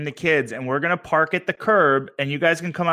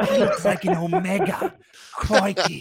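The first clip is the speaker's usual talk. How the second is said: put-on Australian accent, higher pitch; 4 semitones higher than usual. Joking about Professor X with the others: Crocodile Hunter impression. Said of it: "the crocodile hunter".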